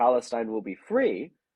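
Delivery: ordinary talk, nothing marked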